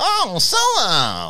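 high, very slow, loud mock creature voice.

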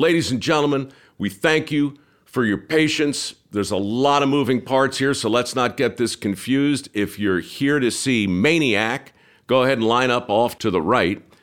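mock booming crowd announcer voice, loud and high. Retelling addressing a crowd lining up for shows, retelling a loud announcement. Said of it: "in my loudest voice".

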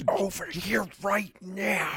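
hushed shout-whisper under the breath. Asked whether someone can yell in a whisper, answering in a shout whisper. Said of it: "That's a shout whisper".

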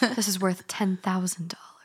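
hushed, whispered TV antiques appraiser voice. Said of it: "In that voice".

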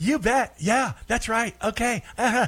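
high yes-man voice. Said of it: "sits there and just kinda nods and goes".

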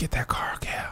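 whispered, hushed. Retelling a dream in which the Lord spoke to him, whispering. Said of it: "the Lord whispered to me in a dream".

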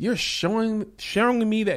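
high, gushing, mock grateful voice.

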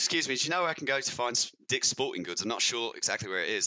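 put-on British accent. Retelling asking for directions in a mall, put-on British accent. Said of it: "How did you start that conversation in the British accent?".

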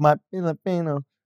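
mock accented pronunciation. Teasing the other speaker by copying how he says the word: imitating an accented "filipino". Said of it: "pronounce Filipino with an accent".

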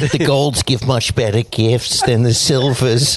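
put-on elderly woman voice. Joking with the others about gift-givers, doing an old lady impression. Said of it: "that a rare [name] old lady impression?".

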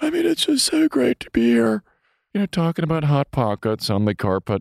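high, swooping comic voice with swinging pitch. Retelling interviewing Jim Gaffigan while imitating him: Jim Gaffigan impression. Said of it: "doing a Jim Gaffigan to Jim Gaffigan".

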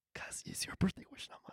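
fast, soft whisper.

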